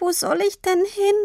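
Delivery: squeaky voice, very high. Tini, ignored by her father, answers him; squeaky. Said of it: "Sie piepste".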